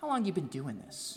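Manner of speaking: soft, patronizing, talking-down voice. Retelling a woman who came up after the service, mimicking her condescending question. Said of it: "kind of condescendingly".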